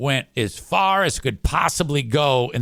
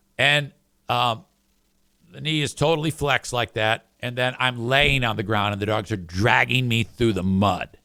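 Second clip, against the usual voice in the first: ordinary talk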